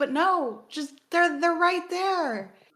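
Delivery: loud, high-pitched exasperated protesting outburst. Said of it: "I'm like".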